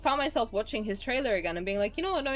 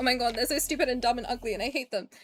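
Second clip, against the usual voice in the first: acted, teasing, sarcastic put-down rant; 2 semitones higher than usual. Retelling how she teases people she likes: imitating her own sarcastic tone. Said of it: "that's the kind of reaction I was giving".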